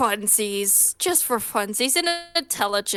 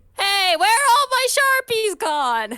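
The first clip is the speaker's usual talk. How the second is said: very high, loud, attempted Brooklyn accent; 12 semitones higher, 5 dB louder than usual. Imagining someone's reaction after Otto leaves, in a high-pitched Brooklyn accent. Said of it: "you just hear a high pitched".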